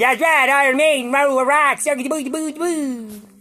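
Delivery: squeaky, very high-pitched bulldog voice. Voicing his bulldog, who loves Iron Maiden: put-on bulldog voice. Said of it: "Big old bulldog says".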